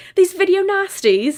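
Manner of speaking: very high, shrill, put-on British accent. Showing how the term has to be said, in a British accent. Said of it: "you have to say it with a British accent".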